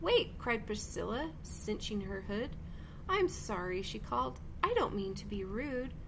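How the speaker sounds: plain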